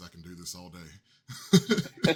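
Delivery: soft, whispered, hushed heroic superhero voice. Card players joking about repeated combos, one adds a line in Captain America voice. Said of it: "Captain America voice".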